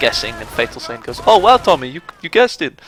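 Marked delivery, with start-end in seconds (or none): 1.3-2.7 high, loud, put-on Swedish accent. Quoting a line from a video series, addressed to tommy: put-on swedish accent. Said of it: "in his Swedish accent".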